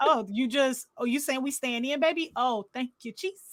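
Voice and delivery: put-on very sarcastic tone. Telling a story, acting out how a woman answered a question: imitating her sarcasm. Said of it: "very sarcastic".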